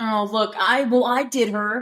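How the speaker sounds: ordinary delivery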